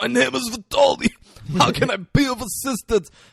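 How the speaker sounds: badly done raspy voice, high and loud. Mocking someone's attempt to sound like Vitoli, in a bad raspy Vitoli voice. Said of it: "He just sounds bad".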